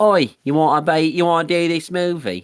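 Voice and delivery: loud, high-pitched, put-on Australian accent. Imitating Peter Jackson asking the composer to do the movie: imitating Peter Jackson. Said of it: "I don't know what accent that was".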